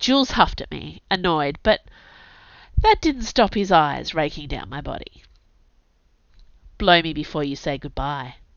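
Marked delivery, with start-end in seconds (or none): 6.8-8.3 low, husky tone. Narrator reading the line said to Jules before he leaves, low husky voice. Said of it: "I suggested in a low husky voice".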